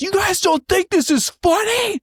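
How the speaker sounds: very high-pitched, shrill screaming. Retelling how a comedian on stage yelled at the audience: imitating someone screaming. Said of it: "he just screamed at us".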